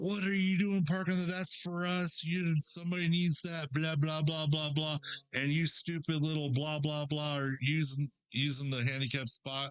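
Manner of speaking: mock yelling, man's voice. Retelling how a man in overalls yelled about the handicap spot: imitating a man yelling. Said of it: "he starts yelling at her".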